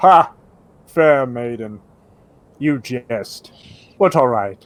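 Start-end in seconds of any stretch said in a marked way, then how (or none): 0.0-3.5 knight voice laughing loudly, getting louder. In an actual-play game, the narrator voices an iron knight, laughing out loud. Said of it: "Not long after, the forest opens up to a clearing where a hulking knight of iron silently guards the doors to the church tower the Ashen Undead have been searching for. / and you can tell that he's gr".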